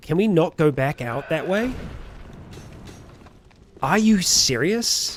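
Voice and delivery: fuming, fed-up, unreasonably angry outburst. While playing a game, the speaker reacts to the route: unreasonably angry. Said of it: "I am unreasonably angry right now".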